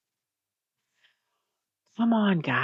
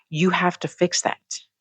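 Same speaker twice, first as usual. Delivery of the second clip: plain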